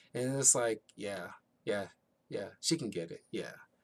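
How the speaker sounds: normal talking voice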